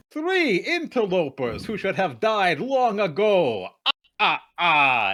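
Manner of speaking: high and loud, ending laughing. Voicing a figure introducing himself to three interlopers: Count von Count voice. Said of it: "I am the Count Von Count".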